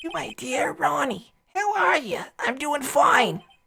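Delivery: put-on woman's voice. Reading a letter aloud as a character imitating its writer: voice like Mort Goldman. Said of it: "I kinda sound like, um, Mort Goldman when I try to do his voice imitating her voice".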